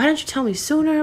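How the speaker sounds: high, worried, caring, concerned gushing.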